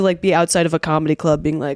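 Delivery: ordinary delivery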